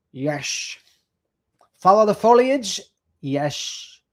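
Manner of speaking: put-on Scottish accent. Doing impersonations for another speaker: Sean Connery voice. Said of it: "we could do it in Sean Connery's voice".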